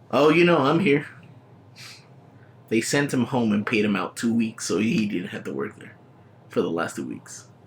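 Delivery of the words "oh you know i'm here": sarcastic delivery. Retelling his reply to the new manager's greeting: imitating a sarcastic tone. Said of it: "I was told it was in a sarcastic tone".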